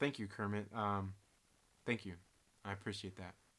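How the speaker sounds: low, soft, welling up, deeply moved. Host thanking a viewer for a message, welling up with emotion. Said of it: "I'm starting to I'm I'm, I'm welling up here".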